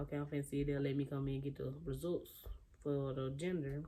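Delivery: ordinary delivery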